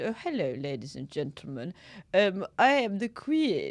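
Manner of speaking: full put-on posh English accent. Giving an example of a put-on voice, doing a posh Queen impression. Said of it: "I'm trying to be posh".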